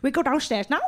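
put-on little childlike voice with Swedish accent. Imitating Buddy asking to go downstairs: little Swedish accent. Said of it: "in his little Swedish accent is like".

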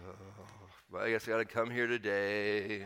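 soft, low, gloomy moping with "today" stretched. A pastor describes his pet peeve about reluctant churchgoers, mopey Eeyore impression. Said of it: "kind of like Eeyore".

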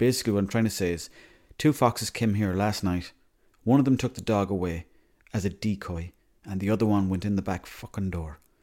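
normal talking voice

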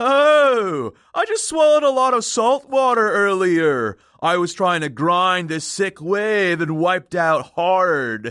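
dumb surfer voice with drawn-out "oh". Asked why Mr. Baxter sounds different, the speaker answers as Baxter in a dumb surfer voice. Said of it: "why are you making him sound like he's some dumb surfer".

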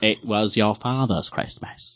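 swooping, animated character voice with wide pitch swings. Asked to try it again for Christmas, doing a Michael Caine impression. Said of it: "I have to do this thing with my lips".

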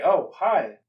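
distant, loud, high voice with echo. Voicing a familiar voice heard across a swamp: echoing voice. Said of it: "kinda echoing".

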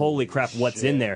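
ordinary delivery

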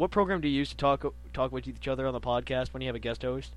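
ordinary talk, nothing marked

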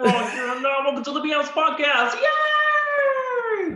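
very high pitch with "yay" stretched out. Welcoming listeners to the podcast, doing the Kermit the Frog voice. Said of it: "Every time he does this impression".

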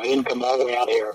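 ordinary talk, nothing marked

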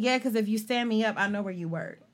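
ordinary talk, nothing marked

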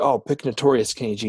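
ordinary delivery

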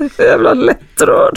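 starting to cry. Listener moved by a story about the other's father, apologizing: starting to cry. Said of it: "Nu börjar jag gråta".

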